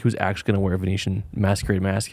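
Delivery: ordinary delivery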